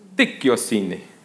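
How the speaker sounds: mock Italian pronunciation, put-on accent. Speaker pronouncing a greek word after asking who will try, italian accent. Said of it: "that's an Italian accent".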